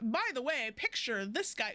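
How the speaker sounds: ordinary delivery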